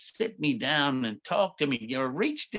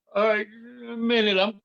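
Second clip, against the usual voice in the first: mock tearful crying through the words; 9 semitones higher than usual. Retelling his own past words after a lashing: imitating himself crying. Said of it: "I'm crying and shit".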